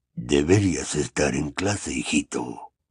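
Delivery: soft, rough, raspy, hoarse gargoyle voice. A stone gargoyle by the staff room door stopping Harry, hoarse gargoyle voice. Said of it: "dijo con voz ronca".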